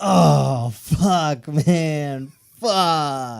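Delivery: very loud, very slow, drawn-out, high-pitched swearing. Doing an impression of the person you are talking to, imitating someone who dropped a peanut. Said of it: "Here's my impression of you when you dropped a peanut".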